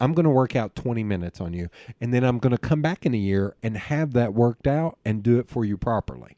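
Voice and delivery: ordinary talk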